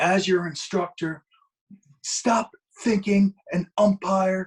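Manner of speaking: high, top-of-the-lungs screaming. Retelling how an instructor screamed at him on the field: imitating someone screaming. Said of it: "He was screaming at me, top of his lungs".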